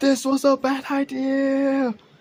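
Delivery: very high shrieking scream, idea drawn out. Narrating a wild ride, the storyteller voices Talia's line, Talia screaming. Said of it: "Talia freaking screaming".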